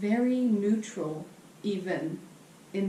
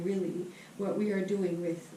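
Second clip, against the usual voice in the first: plain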